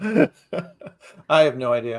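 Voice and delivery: slow, giggling laughter. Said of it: "Why are you laughing?".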